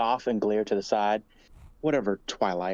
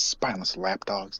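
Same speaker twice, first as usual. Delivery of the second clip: quiet muttering under the breath; 3 semitones lower than usual. Voicing a character after paying the bartender: muttering under breath. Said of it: "I just mutter under my breath".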